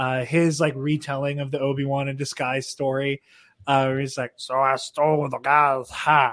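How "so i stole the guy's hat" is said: slow, easy, drawn-out storyteller voice. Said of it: "I love sound of [name]'s voice".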